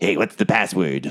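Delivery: sly, little gnome character voice. Voicing a sly gnome peeking through a door slit: sly gnome voice. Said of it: "a little sly gnomish face peeks up over and says".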